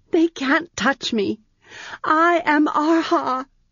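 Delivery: piercing, shrill, fierce high cry. Reading a character's line just before she bursts into tears, shrill, fierce voice. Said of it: "she said in a shrill, fierce voice".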